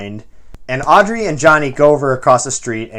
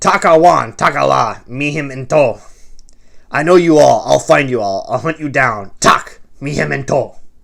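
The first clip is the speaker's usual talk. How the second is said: guttural, throaty voice. Reading a story aloud, voicing what it proclaims in a guttural voice. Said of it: "it proclaims in a guttural voice".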